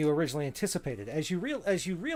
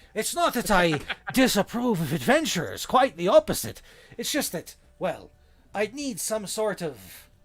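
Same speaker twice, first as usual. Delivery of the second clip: loud, put-on, storybook-style pirate voice; 4 semitones higher, 5 dB louder than usual. A game master gets back into the character's voice: pirate voice. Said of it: "we've got to get back in pirate voice there".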